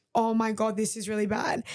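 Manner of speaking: ordinary talk, nothing marked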